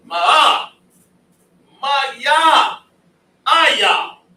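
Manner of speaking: booming, very loud, very slow, very high, drawn-out syllables. Showing someone the loud sound he can make, the speaker makes a loud sound. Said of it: "Isn't that kind of loud?".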